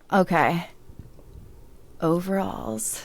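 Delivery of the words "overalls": sultry, seductive, come-hither delivery. Trying to make a plain word sound sexy, sexy, sultry 'overalls'. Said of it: "make overalls sound sexy".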